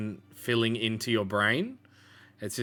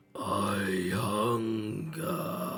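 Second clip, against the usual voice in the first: dropped, deep, low-toned voice; 2 semitones lower than usual. Voicing a whisper that a player hears at night: deep voice. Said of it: "you hear that deep voice go".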